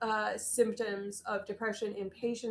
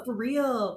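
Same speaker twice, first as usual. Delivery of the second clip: put-on intense, insistent voice, louder; 5 dB louder than usual. Retelling being pressured to eat lentils: imitating Liz at full intensity. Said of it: "full intensity".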